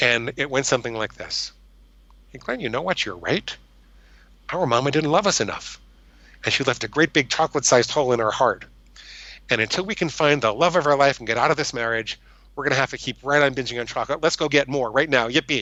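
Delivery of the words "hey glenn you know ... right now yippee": wild, crazy voice inside the head. Retelling what a voice in the head said: crazy voice in my head. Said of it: "this crazy voice in my head".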